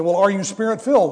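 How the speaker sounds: ordinary talk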